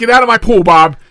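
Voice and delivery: very loud, high-pitched yell. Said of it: "Wow, yelling".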